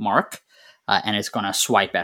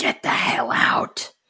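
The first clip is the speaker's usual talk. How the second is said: breathy, whispered creature voice; 2 semitones higher than usual. Narrating a game, voicing the creature confronting the players: creature's voice. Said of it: "And the creature's voice says".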